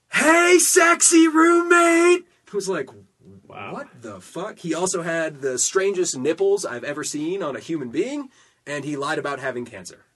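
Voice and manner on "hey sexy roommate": very high, very loud hollering. Retelling how a roommate hollered from far back: imitating someone hollering. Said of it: "hollered to the top of my lungs".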